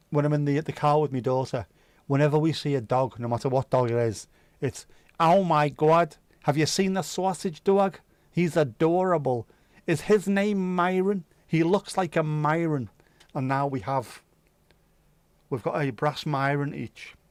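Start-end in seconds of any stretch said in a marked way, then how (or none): 5.2-12.9 put-on Brooklyn New York accent, gushing chatter.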